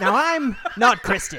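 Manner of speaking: drawn out, laughter leaking through. Joking about a backup plan if the laptop fails: Dennis Prager impression.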